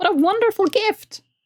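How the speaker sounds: very high, croaky, gruff little gnome voice. Narrating a gnome creature receiving a giant's tooth as a gift, gruff croaking gnome voice. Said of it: "from the gruff croaking of the gnome".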